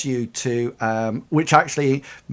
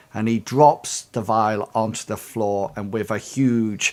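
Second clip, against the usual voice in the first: ordinary talk, nothing marked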